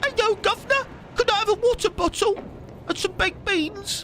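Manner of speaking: over-the-top fake British accent, very high-pitched. Mocking how americans imitate brits, the speaker uses an exaggerated fake british accent. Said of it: "Whenever I hear an American do a British accent, it's all".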